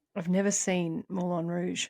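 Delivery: half-whispered, hushed delivery. Confessing something the speaker doesn't want anyone to hear: half-whispering. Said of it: "I'll just whisper it to you".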